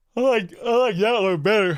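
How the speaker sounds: talking through a yawn. Chatting casually with the other speaker, yawning. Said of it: "Sorry, I'm yawning".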